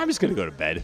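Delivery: mock plain, matter-of-fact, no-fuss tone, as if obvious. Speaker imitates Dane's answer about what to do at home: imitating Dane, matter-of-fact. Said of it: "he says it matter-of-factly".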